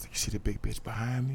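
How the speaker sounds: very quiet, hushed, barely voiced whisper. Retelling how they whispered to a nurse at the counter: imitating own whisper. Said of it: "you need to really stop whispering".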